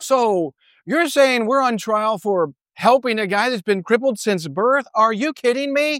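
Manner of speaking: acted, ironic, disbelieving, disrespectful sarcasm. Paraphrasing someone's reply while on trial, retelling a sarcastic retort. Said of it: "It's a very sarcastic and ironic and disrespectful thing to say".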